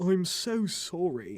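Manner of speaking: bashful, self-conscious, shy voice. Narrator reading a boy's line to the girl telling the story, shy voice. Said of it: "he said in a shy voice".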